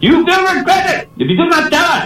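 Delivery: very high, threatening, menacing voice. Telling a story, the speaker voices an officer questioning a soldier: mock-menacing officer voice. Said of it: "said the officer in a menacing voice".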